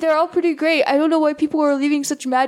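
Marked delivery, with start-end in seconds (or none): 0.0-0.8 put-on casual voice, higher pitch. Imitating a podcast host who likes most board games: imitating Ian. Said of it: "Those are really good Ian impressions".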